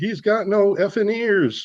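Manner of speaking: slow, high, stretched-out drawn-out scream. Retelling what the passenger in the seat screamed: imitating someone screaming. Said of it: "he screams".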